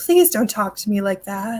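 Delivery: sweet storybook heroine voice, like animation. Recounting a scene where a woman answers a man who calls her furniture: Disney princess voice. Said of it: "she says it in like Disney princess voice".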